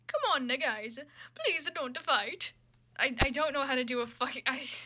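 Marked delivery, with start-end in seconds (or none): 0.1-2.5 put-on, generic, swooping Italian man accent. Speaker tries a stand-in impression instead, a general Italian man impression. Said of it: "I'm just gonna try a general uh, Italian man impression".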